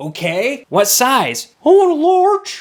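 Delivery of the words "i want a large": put-on very high, loud boy's voice, raised up. Retelling a kid's food order, imitating the kid's voice. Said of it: "They always sound like this".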